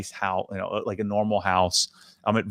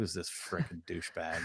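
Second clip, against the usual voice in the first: very quiet, scoffing, dismissive tone; 4 semitones lower, 15 dB quieter than usual. Speaker retells a stereo shop worker handed his resume: imitating a scoff. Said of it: "and he just scoffed".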